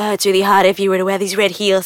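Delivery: low, soft, lazy-tongued coaxing voice. Quoting a guy the speaker used to meet, imitating a soft, lazy voice. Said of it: "With a very soft, lazy tongue".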